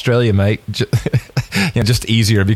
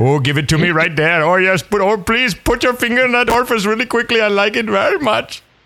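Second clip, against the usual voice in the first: mock Indian accent, pitched higher; 9 semitones higher than usual. Acting out a bedroom line to show the accent doesn't fit: put-on Indian accent. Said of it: "that accent just doesn't fly".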